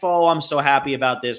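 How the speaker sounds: put-on fake happy voice. Retelling the scene where he calls his wife: imitating Jack Nicholson's fake happy facade. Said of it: "he's putting on his "I want the job" facade".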